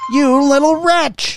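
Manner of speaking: piercing, very high, shrill scream. Narrating a story, Irina screams at Orko: screamed. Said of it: "Screamed Irina".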